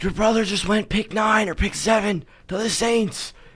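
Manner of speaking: high, loud screamed call-out. Retelling what a fan or coach screamed at a subbed-off player: imitating someone screaming. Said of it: "started screaming".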